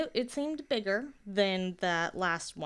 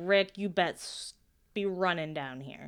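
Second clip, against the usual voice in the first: ordinary talk, nothing marked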